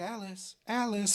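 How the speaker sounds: soft, high, nostalgic calling voice. Retelling a scene, voicing someone from a character's past calling to her, put-on nostalgic calling voice. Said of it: "nostalgic voice of like someone from Alice's past".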